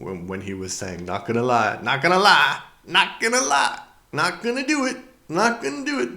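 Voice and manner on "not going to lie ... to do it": hammy exaggerated put-on voice, very high and swooping. Recalling Dana Carvey's sketch, doing a bad George Bush Senior impression. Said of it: "That was a bad, bad, bad impersonation".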